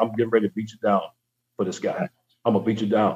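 mock mutter under breath. Retelling what gets said to someone in the draft room: imitating muttering under breath. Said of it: "under my breath, I'll say".

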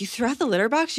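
high, incredulous, disbelieving voice. Retelling their mom's reaction to them, mimicking mom's incredulity. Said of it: "My mom's like".

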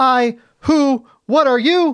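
high, very slow, long pauses between I, who, what. Imitating a scene's dialogue that felt like community theater: long pauses between I, who, what. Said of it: "he puts weird pauses between them".

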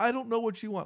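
very high-pitched, argumentative shouting. Retelling an argument with Kubrick, speak her reply to him, imitating someone yelling. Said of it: "she's like yelling".

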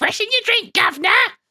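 put-on British waitress voice. Retelling a scene from The Simpsons, quoting the waitress: British waitress voice. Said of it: "real British waitresses".

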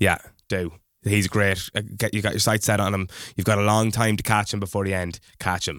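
normal talking voice

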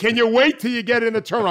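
really yelling, loud and high-pitched. Recalling yelling at passengers smoking on the runway: retelling a yell. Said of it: "I'm yelling".

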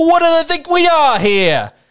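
put-on accent from Long Island. Imitate an Islanders fan upset about the logo change, in the most Long Island accent ever. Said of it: "in the most Long Island accent ever".

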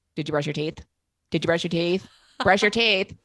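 loud, aggressive, badgering yelling. Retelling the voice in the head that nagged about teeth: imitating a loud aggressive yelling voice. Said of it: "really loud, aggressive voice in my head, like, yelling at me".

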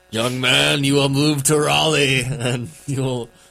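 loud, eerie, spooky, ominous, foreboding voice. Retelling a trick-or-treat story where a pumpkin speaks: spooky, ominous pumpkin voice. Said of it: "in a spooky, ominous voice".

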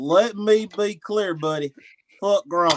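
put-on Southern US accent. Taking a turn practicing accents, in a put-on Southern accent. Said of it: "This is the Southern".

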